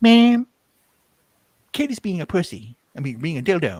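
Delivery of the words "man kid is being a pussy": high-pitched cartoon kid voice. Talking about a cartoon episode, the speaker attempts a Cartman voice. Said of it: "Let me see if I can do Cartman voice".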